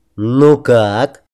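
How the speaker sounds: sneering, mocking voice. He asks, seeing the narrator stunned, in a snide tone. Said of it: "ехидно так осведомился он".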